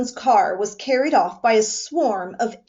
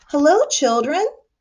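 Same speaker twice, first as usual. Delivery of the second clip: sugar-coated, sweet, sugary voice; 4 semitones higher than usual. Narrator reads a woman greeting the children in a story: sweet voice. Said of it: "someone said in a sweet voice".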